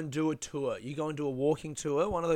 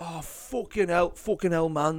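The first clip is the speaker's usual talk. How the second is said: attempted Manchester accent. Speaker imitating a man from manchester met outside a bar, attempted manchester accent. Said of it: "I can't do the Manchester".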